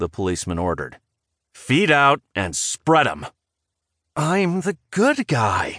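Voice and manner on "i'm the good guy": put-upon grumbling, slow and swooping. A man ordered against a wall by a policeman, grumbling. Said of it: "Jack grumbled".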